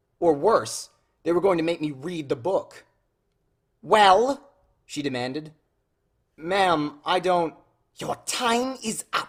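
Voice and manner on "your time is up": slow, high, drawn-out hissing voice. Narrator reads the woman's line cutting off the student, hissed. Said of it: "she hissed".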